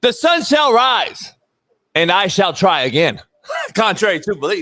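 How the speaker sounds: bold, self-assured tone. Signing off to Smitty after a sponsor read, said with so much confidence. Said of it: "you said with so much confidence".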